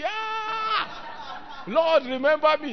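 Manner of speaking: desperate, shouted. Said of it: "you were shouting".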